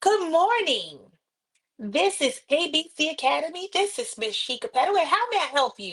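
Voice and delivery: bright smiling tone. Demonstrating how to answer the phone at A B C Academy, answering while smiling. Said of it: "Always answer while you're smiling".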